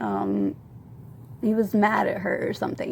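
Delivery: normal talking voice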